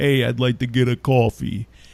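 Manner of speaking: stupid, clichéd, put-on New York accent. Retelling a video of a guy ordering coffee at Starbucks: stupid put-on New York voice. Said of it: "asks for something in that stupid like New York voice".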